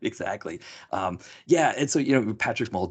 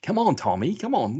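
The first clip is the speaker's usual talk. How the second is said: put-on Australian accent, pitched up; 7 semitones higher than usual. Recalling watching it with your dad, do Norton in his Australian accent. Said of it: "Norton's got his Australian accent".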